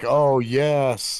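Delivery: calm thrilled tone. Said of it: "And then she's like".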